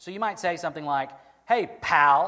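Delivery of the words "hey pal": very loud, agitated voice with irritated edge. Showing how one might say a greeting, a little agitated. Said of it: "with a little bump in your voice, a little agitation".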